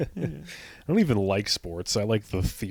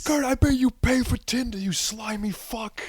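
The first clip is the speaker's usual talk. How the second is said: put-on drunken, very high jeering scream. Retelling heckling a left fielder at a baseball game: imitating a drunken heckling scream. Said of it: "would just be screaming at him".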